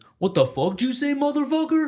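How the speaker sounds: put-on heavy, thick Mexican accent, way up high. Speaker quoting a fellow soldier's reply at company formation, in a thick mexican accent. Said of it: "He has this real thick like Mexican accent".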